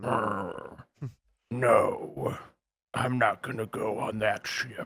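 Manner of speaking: put-on very slow, dragged-out old sea captain voice. Imitating a turtle character who is an old sea captain with a pipe: imitating an old sea captain turtle. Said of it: "a turtle guy that's, like, an old sea captain".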